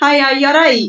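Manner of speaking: put-on Scottish accent. Imagining walking up to someone when nervous and greeting them: pure scottish accent. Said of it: "I just put on a pure Scottish accent".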